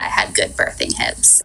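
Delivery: imitated creaky vocal fry. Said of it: "the vocal fry is amazing on that".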